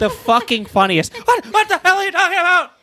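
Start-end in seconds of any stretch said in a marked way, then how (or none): 1.1-2.6 very high, shrill screamed outburst. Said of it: "screaming at [name] in that [name] voice".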